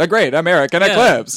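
put-on vintage old-timey radio announcer delivery. Suggesting how a title would sound better: old-timey radio announcer voice. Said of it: "in like an old-timey radio announcer voice".

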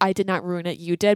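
ordinary talk

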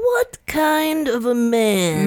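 very slow, high, silly stupid voice, drawn out. Podcaster mimics a racist possum character she hates, in a little stupid voice. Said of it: "Like this little stupid voice".

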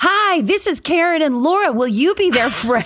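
very high, manic, crazy shouting. Retelling how the dad called to two girls from the car: imitating dad's crazy yelling voice. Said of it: "With this, like, crazy, like, look and s-, the sound in his voice".

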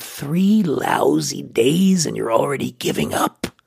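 rough, creaky character voice. Recounting quitting drinking, voicing what guilt said to the speaker, in a guilt voice. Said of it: "That's my guilt voice".

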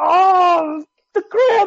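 very high, drawn-out wail of pain, agony. Speaker is hit by a leg cramp while on the air: in agony. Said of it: "you're in agony right now".

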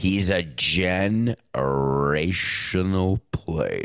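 very slow, drawn-out delivery, as if played at half speed. A speaker says an overused word really slowly, as if at half speed. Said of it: "I'm going to say it really slowly".

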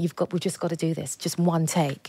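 normal talking voice

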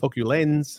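put-on English accent. Showing the others how to sound more english, in an english accent. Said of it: "that's more English".

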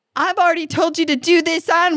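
scolding shout. Recalling catching oneself yelling at the kids, retelling a yell. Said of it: "Why am I yelling about it?".

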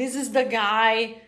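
plain

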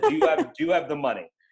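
put-on annoyed voice. Retelling being cut off mid-pitch in a meeting: imitating Jimmy Nederlander Senior, annoyed. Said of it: "He cut me off 'cause he was annoyed and just said".

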